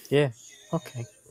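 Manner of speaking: disappointed, underwhelmed, let-down, deflated voice. Answering the game master that the umbrella is just normal: disappointed. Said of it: "Why you sound so disappointed?".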